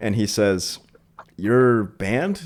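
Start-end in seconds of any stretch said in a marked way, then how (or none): 1.4-2.4 acted-out bewildered, confused, puzzled delivery. Retelling what the T O said outside: imitating a confused question. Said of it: "he was, like, confused".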